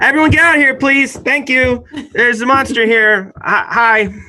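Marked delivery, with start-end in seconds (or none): 0.0-3.3 booming, courteous, very high-pitched bullhorn-style announcer voice. Voicing a character politely telling everyone to leave because of a monster, booming loud polite voice. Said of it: "booming, booming, loud voice".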